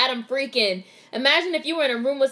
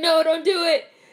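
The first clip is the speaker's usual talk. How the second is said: exaggerated put-on panicked crying voice, higher pitch; 4 semitones higher than usual. Retelling what a movie character says while watching: imitating Adam crying. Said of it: "Adam's, like, crying".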